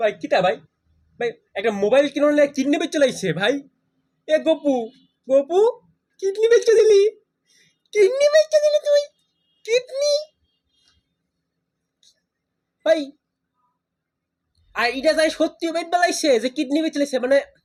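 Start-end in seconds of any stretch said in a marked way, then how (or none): 0.0-13.0 crying, tearful, distressed, much higher. Reacting after a prank about selling a kidney for a phone, crying, distressed. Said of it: "কাঁদছিস কেন পাগল?".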